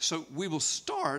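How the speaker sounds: cracked voice, breaking mid-phrase. Preacher starting to teach a Bible passage, voice cracking. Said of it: "my voice cracked".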